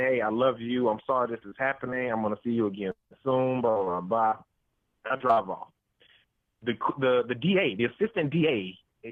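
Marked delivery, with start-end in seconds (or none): none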